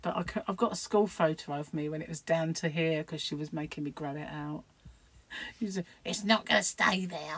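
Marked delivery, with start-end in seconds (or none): 6.0-7.4 witchy storybook voice. Speaker quoting what her mother used to say: witchy voice. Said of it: "She had this witchy poo voice".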